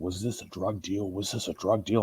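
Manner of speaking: mock aggressive tone. Retelling how police questioned him after he was robbed, imitating aggressive cops. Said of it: "the cops immediately were very aggressive with me".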